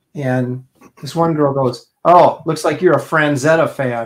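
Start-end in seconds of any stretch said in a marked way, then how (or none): 2.1-4.1 scornful, dismissive, contemptuous sneering tone. Retelling a grad student's remark about a painting, imitating a contemptuous tone. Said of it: "just really with this kind of contemptuous, uh, sort of tone".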